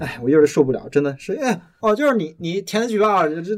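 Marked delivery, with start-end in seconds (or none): 1.8-3.3 sneering, insinuating, snide sarcasm, pitched up. Retelling how the repairman sent over talked: imitating a sarcastic repairman. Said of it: "那个人派过来特别阴阳怪气".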